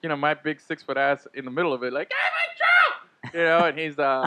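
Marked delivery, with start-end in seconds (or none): 2.1-3.3 put-on very high shouted little-kid voice. Retelling calling to a ballplayer from the crowd: imitating himself pretending to be a kid. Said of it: "pretending to be a kid".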